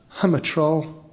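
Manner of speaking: frightened little stage whisper. A troll, as kids run shouting over the bridge above, speaks; small, scared half-whisper. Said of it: "whispered the troll in a small, scared voice".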